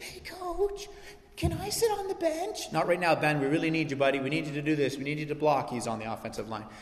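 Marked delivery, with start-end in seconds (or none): 0.0-2.7 put-on tiny, meek, timid, very high child's voice. Retelling how a big kid on the team asked the coach, imitating Ben's little voice. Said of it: "he had this little voice".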